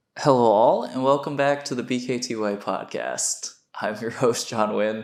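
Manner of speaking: speaking while laughing, words broken by laughter. Opening a podcast episode after choking on water: laughing while talking. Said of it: "the reason I'm laughing".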